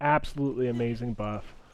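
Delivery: ordinary delivery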